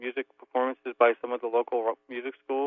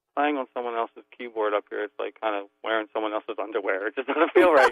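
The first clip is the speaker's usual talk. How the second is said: ordinary delivery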